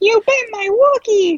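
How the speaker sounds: very high, pushed-up cartoon character voice. Trying a cartoon impression after wishing to: Ralph Wiggum voice. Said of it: "I wish I could do a Ralph Wiggum".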